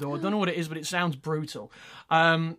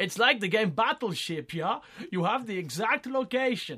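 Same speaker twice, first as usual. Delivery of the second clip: put-on poor, clumsy German accent, pitched up; 6 semitones higher than usual. Reading out a doctor's news quote to the others, poor German accent as Dr. Hoffmann. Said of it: "Do you want me to do a poor German accent?".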